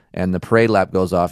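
normal talking voice

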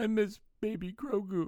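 high, laughing mock sob, fake crying.

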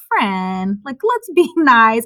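slow, calm, patronizing, talking-down tone. Retelling own words to angry drivers on the road: imitating own condescending tone. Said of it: "that's really just condescending of me".

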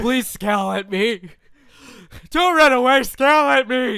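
loud, slow, pleading creepy put-on voice. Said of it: "That's my impression of, um, uh, people who go to these things".

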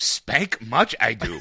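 low, strange, ancient-sounding alien creature voice. Joking about a 900-year-old isolated character, in a Yoda voice. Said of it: "You start to talk Like this now".

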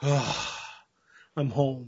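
beaten-down, slumped, deflated, defeated delivery. Retelling an actor's audition, coming home through an imaginary door: imitating a slumped, defeated Al Bundy. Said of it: "slumps his shoulders and goes like".

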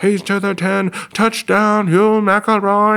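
mock old-time transatlantic sportscaster accent, loud and high. Retelling an announcer's call of a game-winning touchdown, loud transatlantic accent. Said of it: "Has that transatlantic accent that was going really loud".

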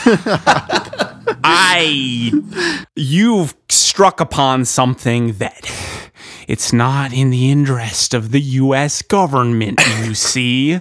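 bad put-on American accent with laughter.

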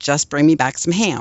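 ordinary delivery

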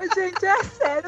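laughing to tears while talking. Reacting to the others' bit, laughing to tears while talking. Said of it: "eu tô chorando de rir".

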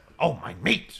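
strained, hurting effort noise. Doing the group's impression of Wright hurting himself: imitating Wright's pained noise. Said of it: "making a noise, either bending over".

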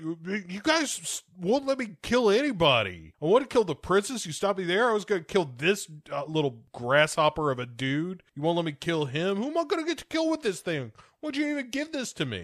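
fed-up, aggrieved, pissed-off angry rant. Retelling a scene from a movie, imitating an angry rant. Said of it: "And he's real pissed off".

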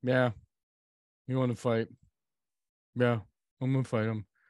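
put-on lifeless, flat, droning monotone, rattled off. Retelling a fighter's interview answer: imitating a monotone voice. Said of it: "He was so, like, monotone".

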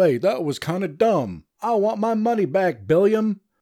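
hint of put-on Southern accent. Imitating a viewer asking for their money back, put-on vaguely Southern voice. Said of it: "I apologize if I offended anyone with that voice. Sound a little southern".

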